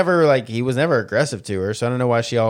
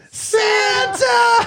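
very high squeal, giddy with excitement; 3 dB louder than usual. Imitating Will Ferrell seeing Santa at the mall: Will Ferrell excited impression. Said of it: "He's so excited".

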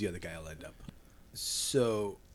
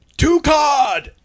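all-out yell, very high-pitched and very loud; 16 dB louder than usual. Telling a story, retelling how a man yelled his order near the kitchen; retelling a yell. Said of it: "So he goes near the kitchen and just yells".

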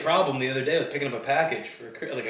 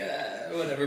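ordinary talk, nothing marked

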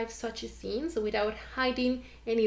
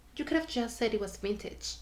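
plain

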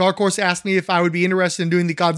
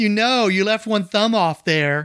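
put-on snotty fanboy tone; 2 semitones higher than usual. A speaker mimics an imagined fan objecting, in a mock snotty fanboy voice. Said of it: "said in a snotty fanboy voice".

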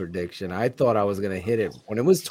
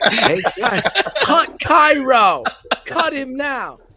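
put-on voice of a man yelling; 7 dB louder than usual. Retelling what a guy at the game yelled: imitating a guy yelling. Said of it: "Some guy's yelling".

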